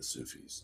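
hushed, very soft, barely voiced whisper. Saying the term the way it must be said: whispered 'the Sufis'. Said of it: "You have to like whisper".

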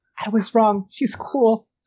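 voiced stage whisper, slow and drawn out. Playing a character who taps a companion's shoulder and half-whispers: half-whispering. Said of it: "so whispers".

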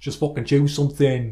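strange fake Yorkshire accent. Recounting cashing in tickets and what she told him, imitating a Yorkshire accent. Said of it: "strange accent".

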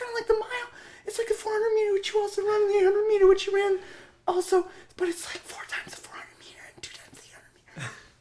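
mocking put-on coach voice. Mocking the coach asking a runner to do the 1600: mocking coach voice. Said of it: "making fun of him using that voice".

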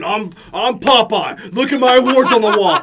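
puffed-up, bragging, boastful show-off tone. Mocking a friend who shows off his awards: mocking imitation of bragging. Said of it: "whenever he starts doing his fucking".

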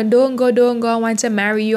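ordinary delivery

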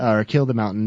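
plain

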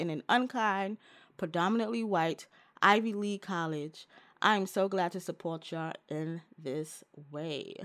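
ordinary talk, nothing marked

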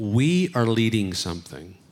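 strong, heavy emphasis on the word "we". Speaker repeats a phrase, leaning on one word: heavy stress on 'we'. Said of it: "I'm really heavy on the we".

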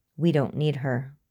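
ordinary delivery

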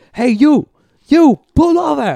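very high, very loud, shrill, drawn-out scream. Speaker recounts being yelled at while riding without a helmet, retelling a man screaming. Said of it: "he's just screaming at me and pointing at me".

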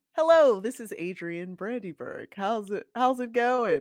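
polite, customer service style phone voice. Asked to show their phone voice, demonstrating it: customer service phone voice. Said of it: "What's your boogie phone voice?".

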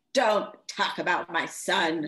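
acted strong, menacing voice. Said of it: "That was like".

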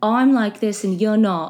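put-on British accent drifting into Australian. Retelling a guy who told people he was British, fake British accent drifting Australian. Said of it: "That was actually more Australian".

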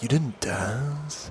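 laid-on, put-on seductive, wooing charmer's voice. Retelling a movie scene where a tall Hungarian man woos a wife: imitating a wooing Hungarian man. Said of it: "And he's just wooing her".

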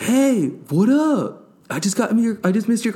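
bright, happy tone, very high pitched. Retelling a friend's phone call greeting: imitating Anthony's happy tone. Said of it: "You sound happy".

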